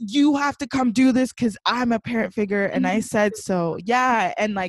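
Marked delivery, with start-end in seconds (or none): 0.0-3.8 mock bossy, yelling voice. Describing how she talks to the speaker's little brother: imitating a parent yelling. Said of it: "she's yelling at my little brother".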